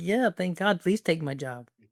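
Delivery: put-on cheery, eager cheer, mild and held back. Retelling calling out at a conference on ai taking jobs: imitating own past yell. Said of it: "Just yelling out like".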